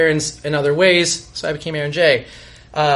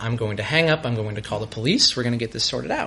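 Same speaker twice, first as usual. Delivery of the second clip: low, soft, very calm voice; 6 semitones lower, 6 dB quieter than usual. Retelling a phone call with a caller, retelling a very calm reply. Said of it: "very calmly said".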